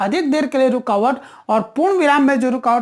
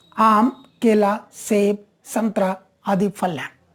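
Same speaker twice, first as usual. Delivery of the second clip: brief pauses after आम, केला, सेब before संतरा; 4 semitones lower than usual. Hindi lesson on commas, reading a fruit list with short pauses after आम, केला, सेब. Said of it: "रुकावट यहां भी आई, ... ये बहुत कम देर के लिए रुकावट थे".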